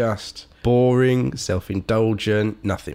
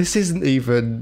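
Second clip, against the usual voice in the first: high-pitched, exasperated outburst. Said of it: "And I'm like".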